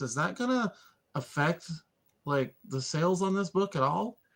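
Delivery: conspiratorial, confiding tone. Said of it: "lean in conspiratorially".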